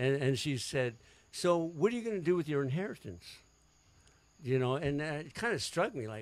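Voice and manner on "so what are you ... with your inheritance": very serious, grave, earnest, matter-of-fact tone. Retelling a phone call in which a mother asked about inheritance, very serious. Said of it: "she was very serious".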